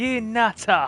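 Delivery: put-on Cockney accent. Playing a game, echoing a character's outburst while imitating a Cockney accent. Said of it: "Love it when Cockneys go full Cockney".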